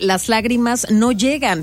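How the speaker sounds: ordinary talk, nothing marked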